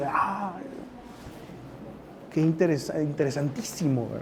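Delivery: sarcastic, feigned enthusiasm and interest. Reacting to a celebrity gossip headline: sarcastic. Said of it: "Claro que estoy siendo sarcástico".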